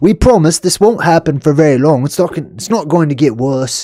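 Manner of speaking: failed, bad put-on Australian accent. Acting out a quoted promise for the others, in a bad Australian accent. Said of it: "That's not an Australian accent".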